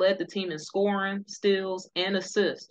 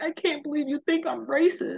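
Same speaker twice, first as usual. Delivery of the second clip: mock crying voice, higher; 8 semitones higher than usual. Retelling a coach's tearful reaction to criticism: imitating Coach Mitz crying. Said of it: "here go Coach Mitz crying".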